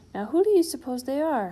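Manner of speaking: grumpy tone. Reading a story aloud, the narrator voices the father character in a grumpy tone. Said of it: "He added in a grumpy tone of voice".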